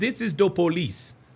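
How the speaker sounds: put-on Jamaican accent. Repeating what a mom in a video said: imitating a Jamaican accent. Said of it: "She sounds like she has a Jamaican accent".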